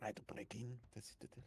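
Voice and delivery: very quiet hushed whisper, barely voiced. In a roleplay game, a player whispers a plan to a fellow character. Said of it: "I'm whispering to Heli".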